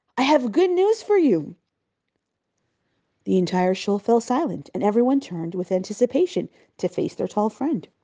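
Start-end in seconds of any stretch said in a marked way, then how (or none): 0.2-1.6 happy, loud, cheery, raised booming voice. Narrator reading a very large man bringing news to the shul; loud cheery booming. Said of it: "he boomed happily in his loud, cheery voice".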